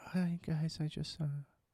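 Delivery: flat, dull, level, droning monotone. Mocking a cast member's way of talking: imitating Lauren's monotone. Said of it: "The monotone".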